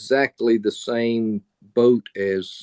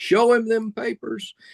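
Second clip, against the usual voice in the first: put-on very high hollered shout, carrying far; 13 semitones higher than usual. Telling a joke where the farmer calls out: imitating a yell. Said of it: "And the farmer yells".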